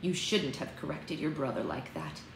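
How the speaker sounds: quiet, low-voiced, motherly murmur. A mother at the kitchen sink speaks to her daughter, said quietly. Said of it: "Evergreen said quietly".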